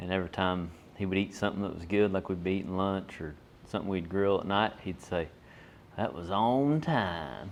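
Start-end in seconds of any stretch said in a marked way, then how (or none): 6.0-7.5 very slow, swooping, real southern drawl. Speaker quotes the man who helped him on the pipeline, imitating a southern accent. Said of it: "real southern accent".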